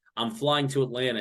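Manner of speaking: ordinary talk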